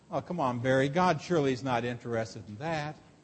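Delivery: low, hushed, half-whispered devil voice. Acting out the devil talking someone out of faith: imitating the devil half-whispering. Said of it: "there is the devil whispering".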